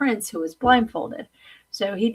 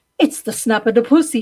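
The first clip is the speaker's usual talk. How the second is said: loud, put-on Italian man's accent; 3 semitones higher, 7 dB louder than usual. Retelling a movie scene where a man peeps through: imitating an italian man.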